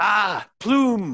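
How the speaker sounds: very high-pitched hollering, bellowing shout. As Klypto, call out while crew members are in earshot, bellowing. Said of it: "he bellows out".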